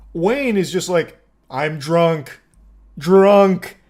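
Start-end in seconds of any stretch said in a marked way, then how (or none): 1.5-3.8 loud, dopey caveman voice, word by word. Act out Wayne, who says he only drank two beers, speaking like a caveman. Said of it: "Speaking like a caveman with like one word".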